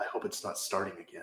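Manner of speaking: quiet whispered muttering. Voicing a character leading two others through the woods: whispering under his breath. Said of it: "he keeps whispering things under his breath".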